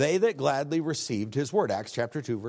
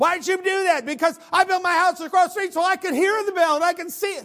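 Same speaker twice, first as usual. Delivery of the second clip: very high, shrill, loud hysterical shrieking; 7 dB louder than usual. Retelling the lady across the street confronting them about the bell, imitating hysterical screaming. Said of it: "she was hysterical".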